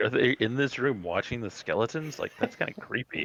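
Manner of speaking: ordinary talk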